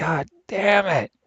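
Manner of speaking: acted, high-pitched, top-of-the-lungs furious yell. Retelling a gamer yelling at the game: imitating someone yelling. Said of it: "yelling at the top of his lungs".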